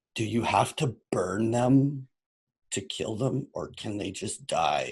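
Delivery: slow, barely aloud, under-the-breath mutter. Asking a question in character about killing trolls: muttering under breath. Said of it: "just under my breath".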